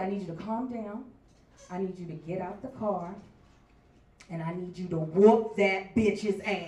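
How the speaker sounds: acted deity-like voice. Retelling hearing the voice of God: voice of God. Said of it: "hear the voice of God".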